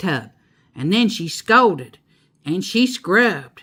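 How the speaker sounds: plain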